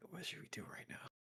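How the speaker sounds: very soft, barely voiced whisper. Quietly asking a companion what the two of them should do now, whispering. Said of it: "pull over um to like a whisper".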